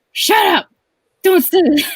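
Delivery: shrill, very high, loud shouting. Retelling a sleeptalking brother yelling at his twin: imitating someone shouting.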